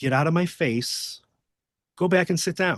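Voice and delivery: muttering under the breath. Retelling what he told a screaming fan, retelling an under-breath mutter. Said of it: "sort of under my breath".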